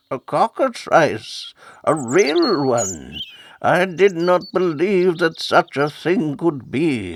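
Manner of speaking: put-on high, wheezing, wheezy old man's voice. Narrator reading a character's line as he comes down the aisle, wheezing. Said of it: "he wheezed".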